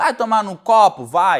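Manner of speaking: mock stern, polite tone.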